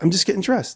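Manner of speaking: high, matter-of-fact, normal tone.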